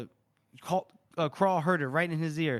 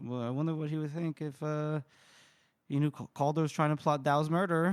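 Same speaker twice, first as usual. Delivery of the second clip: ordinary talk, nothing marked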